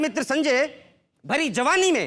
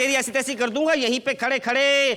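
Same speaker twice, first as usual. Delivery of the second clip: ordinary talk, nothing marked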